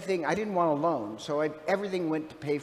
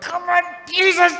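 forced-out strain, very high and loud; 13 semitones higher, 11 dB louder than usual. Imagining a woman straining to pray up a truck: imitating someone straining hard. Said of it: "I just imagined her going".

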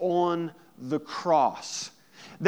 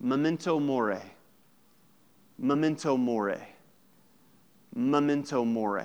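mock muttering under the breath, lower; 5 semitones lower than usual. Retelling a slave's words to a cheered gladiator: imitating speaking under the breath. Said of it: "under his breath".

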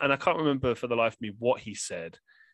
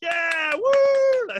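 mock sarcastic whoop, very high, shrill, loud; 8 dB louder than usual. Retelling the audience cheering as a comedian walked off stage: mock sarcastic cheering. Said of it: "Like sarcastically".

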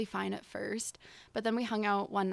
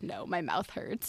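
flustered, panicky, drawn-out speech; 3 semitones lower than usual. Retelling being asked "Can I kiss you?": retelling a panicked answer. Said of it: "I panicked and was like".

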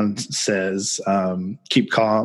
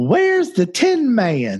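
put-on very high, swooping, sing-song little-girl voice; 11 semitones higher than usual. The speaker retells a little girl calling out as the door opens, in a little girl's voice. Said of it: "this little voice goes".

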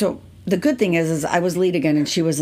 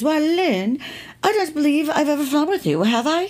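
put-on English accent, pitched way up; 11 semitones higher than usual. Retelling what the woman on the jump seat said to the speaker: put-on English accent. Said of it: "She said in her English accent".

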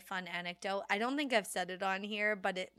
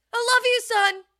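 top-of-the-lungs yell, very high and loud; 15 dB louder than usual. Repeating a dad's line to his son, imitating him screaming. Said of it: "Just like screaming at the top of his lungs".

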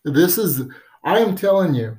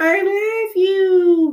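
very high, slow, loud toy voice. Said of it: "with the high voice going".

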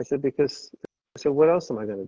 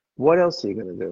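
low New York accent dripping with sarcasm; 5 semitones lower than usual. Telling the group how the catchphrase should be said: sarcastic New York accent. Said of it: "you got to say with a New York sarcasm".

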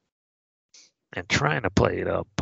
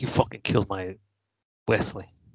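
ordinary talk

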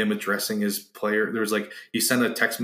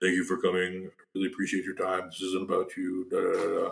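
mock super dry, flat, no emotion at all; 3 semitones lower, 4 dB quieter than usual. Retelling a coach's farewell speech to players: dry unemotional Brian Kelly imitation. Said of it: "super dry and, like, not really, like, emotional".

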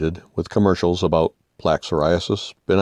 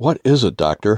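tremor, trembling, quavering voice; 2 semitones higher than usual. A patient asks the doctor what is wrong, with a tremor in voice. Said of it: "I said with a tremor in my voice".

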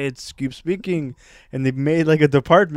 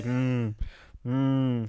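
mock gloomy grunting, lower and quieter; 4 semitones lower, 10 dB quieter than usual. Imitating how everyone in Russia acts: gloomy grunting locals. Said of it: "That's my impression of".

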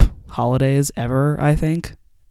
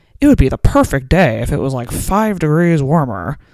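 put-on mildly grouchy, cranky old-man voice; 4 dB louder than usual. Quoting George's usual remark on a mild day, imitating George, slightly cranky. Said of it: "the George one is like a slightly cranky old man".

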